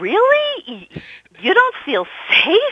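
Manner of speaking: high, loud, slowed, stunned disbelief. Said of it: "I said in disbelief".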